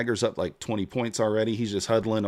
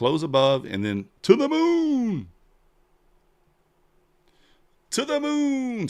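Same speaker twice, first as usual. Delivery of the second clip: hyped-up, excited yelling, swooping, rising and building; 12 semitones higher than usual. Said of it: "Sorry if I'm yelling in y'all's ears".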